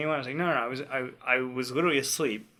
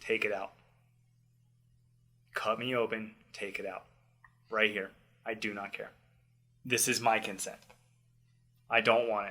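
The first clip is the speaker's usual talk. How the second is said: flat, quiet, deadpan, dead-serious insistence; 3 semitones lower, 5 dB quieter than usual. Retelling his words to a doctor standing over him, retelling a deadpan demand. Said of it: "just deadpan, just fucking full serious".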